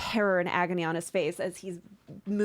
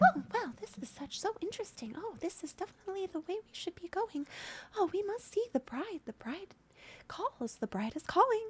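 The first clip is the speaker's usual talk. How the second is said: very high, soft, cheerful muttering to self; 12 semitones higher, 7 dB quieter than usual. Others shout after Hemlock, who mutters to themselves: Hemlock's cheerful muttering. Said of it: "muttering to themselves in that cheerful".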